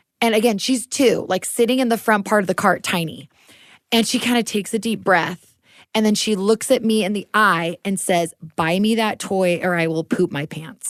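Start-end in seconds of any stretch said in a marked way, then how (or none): 8.6-10.9 put-on deadpan menacing tone. Retelling a two-year-old daughter's threat in a store: imitating a straight-faced threat. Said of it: "Did she say it with a straight face?".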